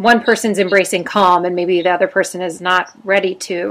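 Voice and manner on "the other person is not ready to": normal talking voice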